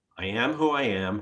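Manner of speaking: ordinary delivery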